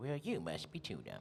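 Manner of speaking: put-on soft little old man character voice. Retelling voicing a goat doctor character: little old man voice. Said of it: "like, little old man".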